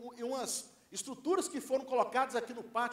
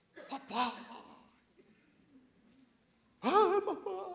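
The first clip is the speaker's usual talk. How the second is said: put-on tearful sobbing cry, pitched up; 6 semitones higher than usual. Retelling a phone call from a daughter: imitating daughter sobbing. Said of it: "minha filha me liga soluçando, chorando".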